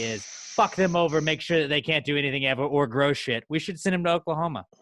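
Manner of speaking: sarcastic, with mock earnestness. Acting out what America said when displacing people: sarcastic, imitating America. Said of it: "and I'm saying this sarcastically".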